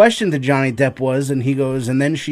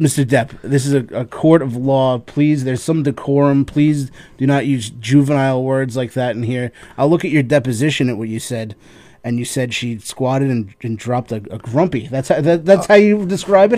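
ordinary delivery

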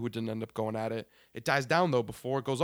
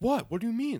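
mock-confused, much higher; 10 semitones higher than usual. Speaker retells a group acting confused instead of apologizing, acting confused. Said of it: "Like they're acting confused".

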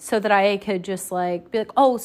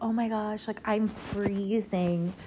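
put-on, trying-to-be-flirty tone; 8 dB quieter than usual. Retelling a message to a guy, imitating her own flirty tone. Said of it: "trying to be, like, flirty".

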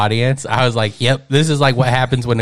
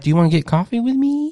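very high, come-on tone; 11 semitones higher than usual. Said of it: "like a hot girl talking to, a dude".

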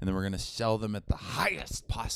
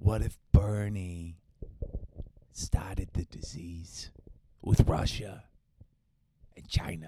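put-on, laid-on Brooklyn accent; 2 semitones lower than usual. A bit that started as a Brooklyn guy turns into: Trump impression. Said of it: "Is that your Trump impression?".

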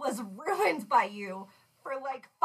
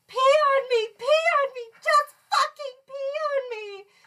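mock pained howl, very high, loud, drawn out; 12 semitones higher, 5 dB louder than usual. Retelling the speaker's ex just stung by a jellyfish, retelling his scream. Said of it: "starts screaming".

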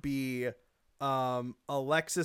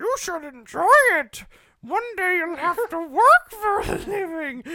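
shrill, very high, loud voice; 9 dB louder than usual. Quoting a line from Joker all day around the house, as Joker imitating his mother. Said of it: "Joaquin Phoenix imitates his mother".

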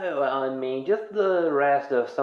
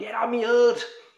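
very high, aggressive, violent yelling outburst; 10 semitones higher than usual. Retelling how a character says a line: imitating Hap's violent yell. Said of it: "With so much violence".

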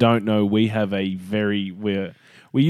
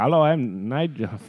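put-on Indian accent; 4 semitones higher than usual. On their podcast, joking about indian guys named nigel; imitating an indian accent. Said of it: "Fucking straight into the accent".

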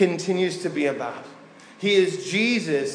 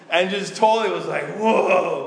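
normal talking voice

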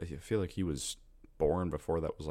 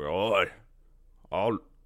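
mostly grunts in a badly done Scottish accent; 2 semitones higher, 4 dB louder than usual. Imagining a Scottish Michael Myers: bad Scottish Michael Myers voice. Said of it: "a Scottish Michael Myers".

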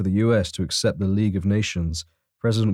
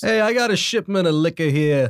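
put-on New York accent; 8 semitones higher than usual. In a skit with a boss and his crew, a henchman announces a liquor shipment, New York accent. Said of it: "but it's got to be New York style".

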